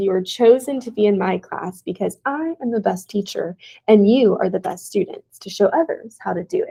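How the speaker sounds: ordinary talk, nothing marked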